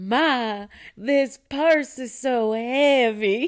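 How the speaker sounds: high-pitched, very slow, drawn-out country drawl. Recalling a cartoon clip, the speaker quotes it in SpongeBob's country accent. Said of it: "two country accents on SpongeBob".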